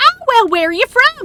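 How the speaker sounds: put-on high-pitched, thick southern US accent.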